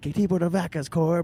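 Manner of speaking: high, mild, token yell. Retelling screaming a phrase from the crowd at a show: imitating own scream. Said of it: "I screamed it as loud as I could".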